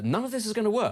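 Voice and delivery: really upbeat, bright voice.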